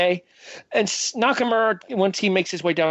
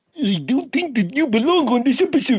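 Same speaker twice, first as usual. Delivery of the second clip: put-on goofy, pitched-up high cartoon character voice; 6 semitones higher, 3 dB louder than usual. Joking with a co-host, trying a Marvin voice: Bullwinkle voice. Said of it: "I went Bullwinkle instead of Marvin".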